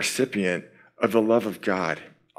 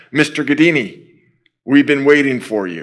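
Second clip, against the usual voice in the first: put-on English spoken with a Turkish accent; 4 semitones higher, 7 dB louder than usual. Speaker retelling a Turkish agent greeting him by name: Turkish accent in English. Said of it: "Turkish accent in English".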